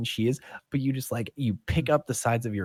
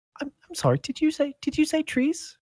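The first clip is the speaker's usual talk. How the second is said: tiny, very high, small little voice. Someone at the back questions the players, small, quiet voice. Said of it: "a small, quiet voice in the back go".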